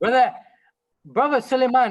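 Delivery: high, loud calling voice.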